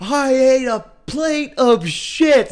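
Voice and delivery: all-out scream, very high and very loud. Retelling what they screamed while filming each other in the car, retelling a scream. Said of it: "we were screaming".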